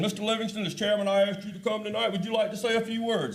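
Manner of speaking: distinguished chairman voice. Retelling the chairman inviting him to speak at a meeting, Walt McLeod's distinguished voice. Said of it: "in his distinguished voice".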